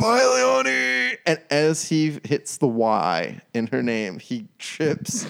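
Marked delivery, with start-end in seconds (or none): 0.0-1.2 very high, raw, rough shouted yell. Retelling a man sprinting after a departing woman, retelling his yell. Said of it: "And he yells".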